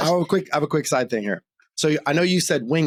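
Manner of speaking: plain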